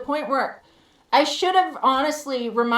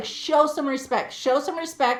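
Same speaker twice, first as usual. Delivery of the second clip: usual speaking voice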